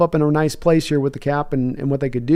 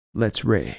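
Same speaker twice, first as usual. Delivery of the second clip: hushed, secretive whisper under the breath; 5 semitones lower, 6 dB quieter than usual. Speaker acts out how he would say the line, retelling a whisper. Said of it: "And he whispers it".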